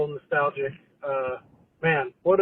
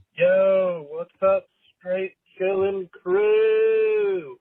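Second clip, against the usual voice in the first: very slow, high drawl, with crew stretched long; 5 semitones higher, 3 dB louder than usual. Opening a voicemail to the crew with a greeting: Todd impersonation. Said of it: "That was my best Todd impersonation".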